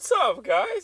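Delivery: shrill, very high, very loud cracking voice. Retelling greeting a group while heartbroken, imitating a cracking voice. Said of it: "my voice hella cracked".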